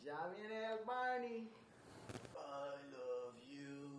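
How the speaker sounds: very slow, groggy drawl, every word dragged out. Acting out a quinceañera Barney: hungover Cheech Marin Barney voice. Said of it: "That sounds like a hungover Cheech Marin Barney".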